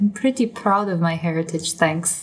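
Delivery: mumbled quietly, half to herself. A roleplayer voices her character's aside after she shakes her head; muttered under her breath. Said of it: "under her breath".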